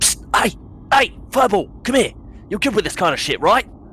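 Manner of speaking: very high, hurried, hushed voice. A character peeks out of a booth and calls someone over, hushed call. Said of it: "in a hushed tone".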